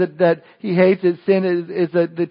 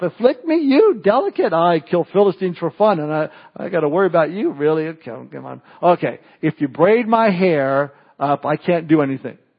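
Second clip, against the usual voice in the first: put-on amused tone, dismissive, laughing it off. Acting out Samson brushing off Delilah's question: laughing it off. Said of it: "Samson kinda laughed it off".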